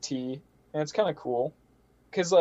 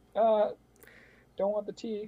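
mock socially awkward, halting, slow, pitched-up reply; 6 semitones higher, 5 dB quieter than usual. Acting out someone turning down tea during a sex talk: imitating a socially awkward reply. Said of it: "That was a good impression of that".

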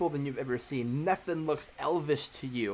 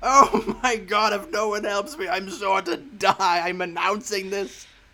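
loud, high, blood-curdling, desperate, terrified wailing scream; 5 semitones higher, 7 dB louder than usual. In a role-play, narrating an unseen voice crying out in the distance with a blood-curdling scream. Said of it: "a blood-curdling scream off in the distance".

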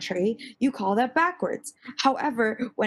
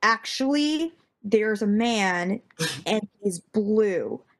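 ordinary talk

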